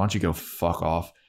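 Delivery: put-on angry voice. Retelling a scene, quoting Spike still pissed off: imitating pissed-off Spike. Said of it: "he's still, like, pissed off".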